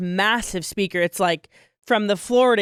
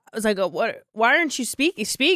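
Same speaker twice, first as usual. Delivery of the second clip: plain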